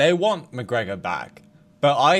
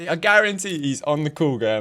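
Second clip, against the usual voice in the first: ordinary talk, nothing marked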